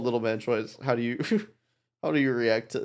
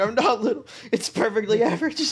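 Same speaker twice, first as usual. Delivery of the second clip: pitched-up, angry yelling; 9 semitones higher than usual. Imitating a character still yelling about being called little: imitating someone yelling. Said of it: "still just, like, yelling".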